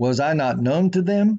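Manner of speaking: slight questioning rise on them. Reading a verse aloud as a question, questioning rise on them. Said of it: "I read that with a little inflection to show that there's a question mark".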